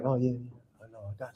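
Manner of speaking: put-on timid tone. Showing the soft tone used in normal conversation, put-on timid conversational tone. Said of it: "as opposed to being like".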